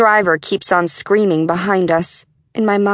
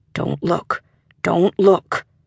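barely there, breathy, soft, hushed whisper. A father holds his child close, covering the child's eyes, whispering. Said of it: "he whispers".

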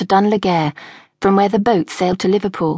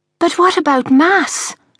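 very high-pitched gasp of horror; 9 semitones higher than usual. Reading a story, a daughter reacts to her father's order to leave, gasping in horror. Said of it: "Tara gasped in horror".

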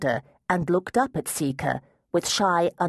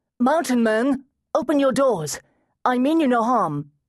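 loud, very high call pitched to carry; 9 semitones higher, 4 dB louder than usual. Seeker, standing back from the high wall, calls to the mountain men: calling out loudly. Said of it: "called in a loud voice".

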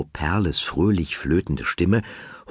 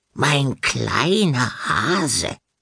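high, sweet, flute-like fluting voice; 7 semitones higher than usual. Horn, laughing with Nickel, mimics a pet name, fluting Frau Perle imitation. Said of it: "flötete er wie Frau Perle".

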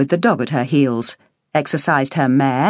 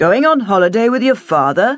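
mocking, teasing, derisive, pitched-up tone; 6 semitones higher than usual. [name] answers Barbara, mocking. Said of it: "[name] mocked".

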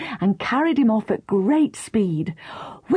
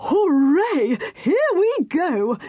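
very slow, high, drawn-out, enthusiastic excited shout; 7 semitones higher than usual. Mr. Whisker answers Katie as they join the downhill procession: shouted most enthusiastically. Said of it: "He shouted most enthusiastically".

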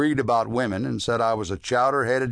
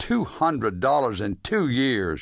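contemptuous, belittling, scornful, dismissive tone. A woman dismisses the narrator's savings before sending him away; scornful. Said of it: "she said scornfully".

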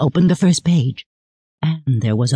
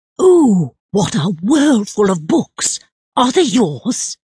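high, exclaimed, drawn-out outcry; 7 semitones higher than usual. Narrator reads the king entering before his ministers: crying out. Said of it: "when Lionel cried out".

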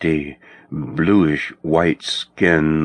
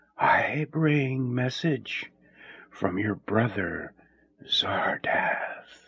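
very hushed whisper, soft as wind and high; 6 semitones higher, 9 dB quieter than usual. Reading a story, a hooded wraith delivers a message, in a soft whisper. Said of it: "A voice, soft as an autumn wind, whispered".

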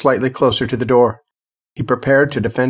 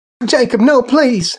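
very high, piercing scream; 11 semitones higher, 4 dB louder than usual. Mary cries out to Jacob as she drags Sheila to the stairs; screamed. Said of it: "Mary screamed".

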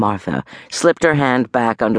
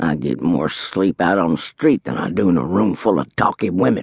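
gravelly voice settling into a low mutter; 5 semitones lower than usual. Martha's roommate, turned away in bed, speaks to the room in a gravelly mutter. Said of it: "The gravelly voice settled into a mutter".

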